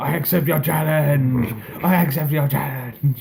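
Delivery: shrieking high-pitched yell. Recapping a match and quoting a champion: imitating Rusev screaming. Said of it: "Rusev screaming".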